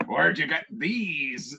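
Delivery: bad, terrible put-on pirate-woman accent. Quoting a woman who was talking like a pirate, terrible pirate woman voice. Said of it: "She's talking like a pirate woman".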